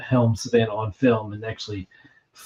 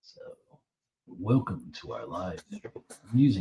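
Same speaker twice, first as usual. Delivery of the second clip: soft on-air radio announcer voice; 3 semitones lower, 8 dB quieter than usual. Speaker demonstrating his radio voice for the other speaker: radio announcer voice. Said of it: "my radio voice now".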